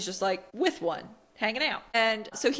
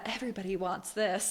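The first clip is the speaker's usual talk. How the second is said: knowing, sarcastic, dramatic film-style delivery; 2 semitones lower, 5 dB quieter than usual. Retelling a scene where a character quotes a film: Devil Wears Prada delivery. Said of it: "he does a, a Devil Wears Prada".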